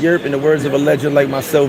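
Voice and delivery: ordinary talk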